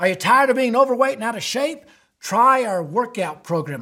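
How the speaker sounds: put-on Southern US accent in sales-pitch style. Demonstrating problem-and-solution sales pitches for products: Southern accent. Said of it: "I don't know why I went to the Southern accent with that".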